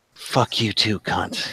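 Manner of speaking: sharp pained inhale. Narrating a stabbed enemy's last words during a game, gasping in pain. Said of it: "she just inhales sharply".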